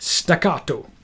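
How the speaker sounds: attempted put-on Italian accent, delivered staccato. Explaining a strumming pattern, saying staccato in a put-on italian accent. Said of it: "That was my attempt at an Italian accent".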